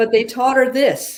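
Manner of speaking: ordinary delivery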